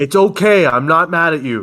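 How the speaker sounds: clearly cross, angry edge. A character who invited himself to the table speaks to the group, in an angry tone. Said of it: "you do have quite an angry tone to your voice".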